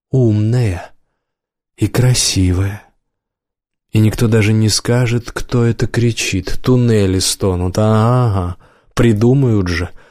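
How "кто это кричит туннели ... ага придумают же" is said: ordinary delivery, nothing marked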